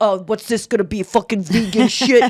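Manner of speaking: imitated male New York accent. Retelling how a New York judge reacted to vegan food: imitating a New York accent. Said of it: "he's talking like this".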